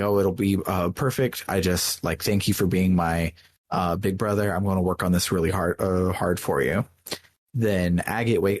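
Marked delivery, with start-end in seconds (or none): none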